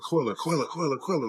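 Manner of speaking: mock hysterical frantic calling, held back and repeated. Retelling how a mother found her daughter, the speaker imitates her hysterical yelling. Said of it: "She's just yelling".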